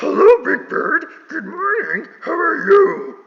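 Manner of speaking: very high, loud, slow puppet monster voice. After questioning another reader's imitation, offering their own version: Grover voice. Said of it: "I think Grover sounds like this".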